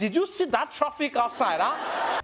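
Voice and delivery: put-on Nigerian English accent, slow and unhurried. Comparing how Nigerians ask about the traffic: imitating a Nigerian accent. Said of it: "when Nigerians come inside".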